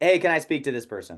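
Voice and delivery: blunt, direct, no-frills tone. Showing the tone for calling a gate guard to reach someone, really direct tone. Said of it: "the tonality is like ... Like really like direct".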